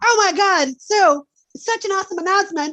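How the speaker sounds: very high, loud presenter voice. Imitating a panel presenter excitedly announcing news: imitating a presenter like Cartman. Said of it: "You sound like Cartman".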